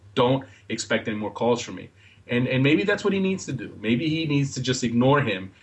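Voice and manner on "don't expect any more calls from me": plain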